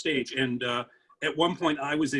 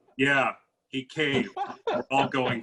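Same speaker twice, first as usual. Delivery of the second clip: play-acted, totally deadpan, matter-of-fact delivery. Retelling how a friend answered a question about a juror, totally deadpan. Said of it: "totally deadpan".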